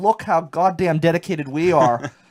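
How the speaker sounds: put-on proud, boastful tone. Retelling a reporter's words on the ice, imitating someone sounding really proud. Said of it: "he said it like he was really, really proud".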